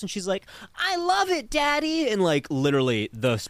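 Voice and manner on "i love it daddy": put-on very high, slow, creepy horror-movie little-girl voice. Retelling a movie scene where a girl answers her father: imitating a horror-movie little girl voice. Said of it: "most stereotypical little girl in a horror movie voice".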